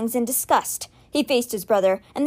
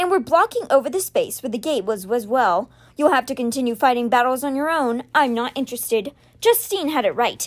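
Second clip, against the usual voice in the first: usual speaking voice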